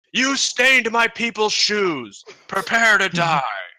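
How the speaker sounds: high, booming bellowing. The narrator voices a figure heard from the fog cloud, answering them: bellowing voice. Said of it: "a sort of a bellowing voice that says".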